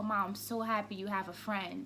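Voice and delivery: ordinary talk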